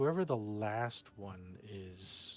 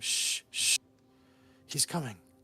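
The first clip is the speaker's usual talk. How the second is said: put-on loud shushing in a child's voice; 3 semitones higher, 6 dB louder than usual. Voicing a child heard shushing someone: child's shushing voice. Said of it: "you hear another kid's voice shushing someone".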